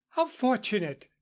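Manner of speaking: eager, excited exclamation. Reading a story where a teacher greets two dogs: exclaiming. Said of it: "exclaimed Missus Waverley".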